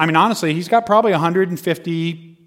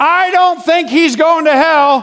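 mock very high, drawn-out yell, as if from far back; 12 semitones higher, 6 dB louder than usual. Recounting standing at the back of a group and calling out, retelling own yell. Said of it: "I just yelled out".

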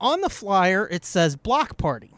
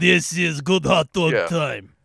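put-on Eastern European accent; 4 semitones lower than usual. Showing the other speaker how the line was supposed to sound, fake eastern european accent. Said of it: "you mean it was supposed to be like".

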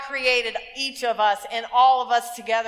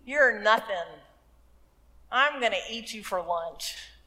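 scornful, disdainful, condescending taunting tone; 4 dB quieter than usual. Acting out the giant's words to David, mock disdain. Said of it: "he talks with disdain about David".

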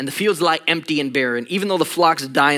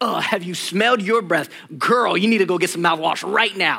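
put-on defensive, attacking tone, higher; 3 semitones higher than usual. Retelling a defensive comeback about a wife's breath: retelling an attacking comeback. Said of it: "I just started attacking".

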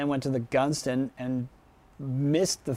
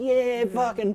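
put-on surfer voice, pitched higher; 9 semitones higher than usual. Retelling a crowd bit at a wet t-shirt contest: imitating a fellow surfer. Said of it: "I just went into a full imitation of you".

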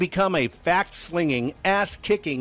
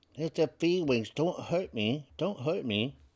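put-on soft, sweet voice; 8 dB quieter than usual. Show host putting on a voice for his audience, soft, sweet snowflake voice. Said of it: "I do take on my soft, sweet, snowflake voice".

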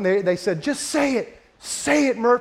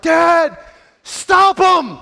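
mock loud, high yelling at top of lungs; 8 semitones higher, 6 dB louder than usual. Retelling yelling to dad in front of everybody; retelling a yell at top of lungs. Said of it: "I yelled to the top of my lungs".

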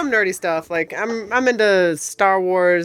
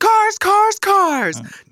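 very high, hyped used-car sale announcer pitch; 13 semitones higher, 3 dB louder than usual. Joking about how someone's read sounded, speaker does a mock used-car sale announcer. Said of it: "somebody is like having like a big old sale at their used car lot".

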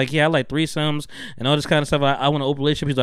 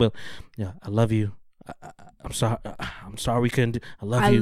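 deadpan, low, flat monotone delivery; 5 semitones lower, 4 dB quieter than usual. Imitating a reality show contestant saying goodbye: imitating someone's monotone voice. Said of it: "he just is so monotone".

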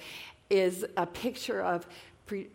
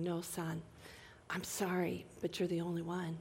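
put-on sad tone, much quieter; 10 dB quieter than usual. Speaker imagines God the Father answering his son, acting out a sad reply. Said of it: "sadly shaking his head and saying".

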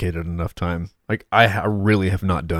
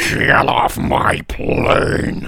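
gurgly put-on voice, higher and louder; 7 semitones higher, 6 dB louder than usual. Quoting a film line: gurgly Harrison Ford voice. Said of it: "He's so gurgly on that".

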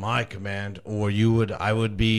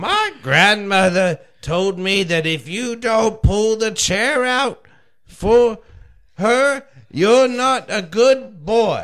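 put-on loud, very high-pitched old northern voice; 12 semitones higher, 5 dB louder than usual. As [name], doing an impersonation of an elderly northerner: elderly northerner impression. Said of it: "this is [name] doing an impersonation of an elderly northerner".

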